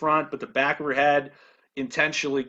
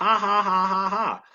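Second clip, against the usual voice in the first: high, sarcastic, robot-like laugh. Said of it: "sarcastically, joking".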